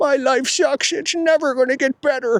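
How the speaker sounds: very high, sobbing, blubbering crying whine. Acting out a depressed business owner crawling around: imitating someone crying. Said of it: "You're crawling around crying".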